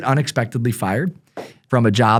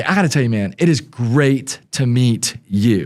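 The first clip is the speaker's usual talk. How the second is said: plain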